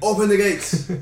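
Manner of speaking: loud, high, commanding shout. Arriving at the gates in the game, the players call out: shouting.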